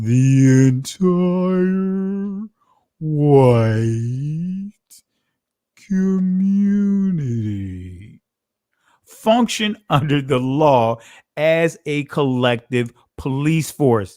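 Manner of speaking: very slow, deliberate, slow-motion reading. Reading a quoted passage again for a brother, in slow motion. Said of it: "Let me say it in slow motion".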